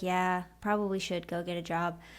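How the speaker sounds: mock dejected, flat, deflated, all energy drained. Retelling giving up on a dream: imitating her deflated past self. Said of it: "My shoulders slumped and my energy dimmed".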